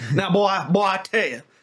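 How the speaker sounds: loud, high Southern cartoon drawl. Told they sound like a cartoon character, slipping into it: Foghorn Leghorn voice. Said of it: "I was getting a little foghorn kind of there".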